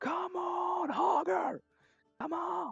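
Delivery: crowd yelling and cheering. Describing a fight pit crowd cheering on fighters: crowd yelling. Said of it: "People are just yelling".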